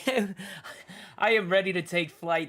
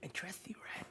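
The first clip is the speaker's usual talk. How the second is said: breathy, hushed, very quiet whisper; 19 dB quieter than usual. Role-playing a character climbing down a ladder in the dark, whispering to a companion. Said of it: "I'm just gonna whisper".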